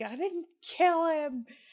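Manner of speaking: high, slow, pissed-off, defensive anger. Describing questioning your wife about her father, retelling her mock-angry denial. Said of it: "she gets all pissed".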